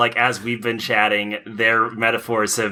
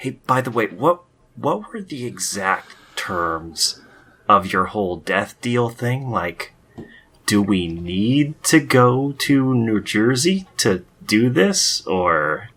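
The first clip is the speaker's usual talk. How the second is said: whispered words. Answering another character's whispered question with a whisper, whispering. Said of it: "I'm gonna whisper back".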